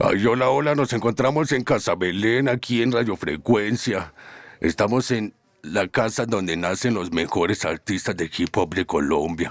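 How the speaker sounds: put-on cartoon character voice. Presenting the radio show on request, in a Homer Simpson voice. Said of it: "imitación de voz de Homero".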